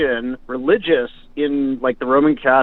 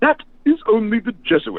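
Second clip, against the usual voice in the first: put-on South African accent, swooping pitch; 9 semitones higher than usual. Quoting a monk who corrected him, in a South African accent. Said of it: "he had the South African accent".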